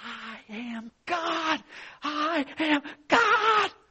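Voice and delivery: shrill, very high, stretched-out, rising shout. Retelling a story where angels hear a woman down below, imitating someone yelling. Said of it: "she's yelling".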